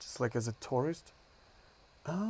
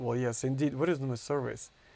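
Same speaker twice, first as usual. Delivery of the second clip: usual speaking voice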